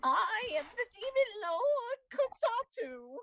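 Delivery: very high-pitched, loud demon voice. Narrator voicing a demon lord heard inside the listener's head, Kotsatu demon voice. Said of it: "That's my favorite demon voice".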